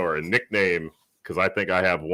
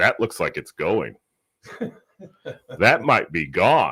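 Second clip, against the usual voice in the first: usual speaking voice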